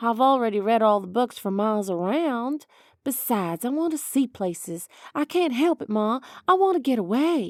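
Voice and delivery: ordinary delivery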